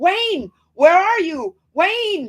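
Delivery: very high, loud, long drawn-out scream. Retelling sleepwalking at the kitchen window: imitating own screaming. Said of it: "and I'm screaming".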